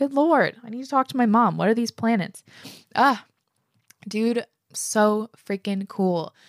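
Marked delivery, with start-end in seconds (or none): 0.0-1.6 choked up, teary, pitched-up voice. Reacting to a listener's story after a recording: tearing up. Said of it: "Here I am tearing up again".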